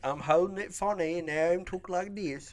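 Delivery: put-on Cockney accent. Holding it funny and trying out a voice, speaker talks in a cockney Droopy voice. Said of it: "You're a combination of cockney and droopy".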